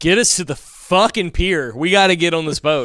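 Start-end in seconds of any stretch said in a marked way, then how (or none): none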